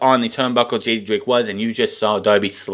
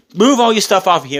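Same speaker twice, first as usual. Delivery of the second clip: very shrieky, high-pitched, loud voice; 9 semitones higher, 5 dB louder than usual. Retelling a wrestling segment, imitating the Bunny: imitating a high shrieky voice. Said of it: "in a very shrieky, high shrieky voice".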